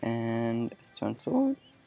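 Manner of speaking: voice breaking, cracking mid-line. Narrating what gets crafted next in the video, with a voice crack. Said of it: "Pretty sure I just voice cracked right there".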